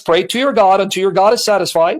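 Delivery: ordinary delivery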